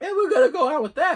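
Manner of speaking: voice cracking. Introducing the stories behind his pickups, with his voice cracking. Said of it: "My voice is cracked".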